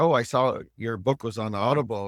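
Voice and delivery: ordinary talk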